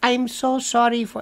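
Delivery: slow, scripted call-centre agent delivery. Acting out a call center agent reading their speech, imitating a call center agent. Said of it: "They talk like this".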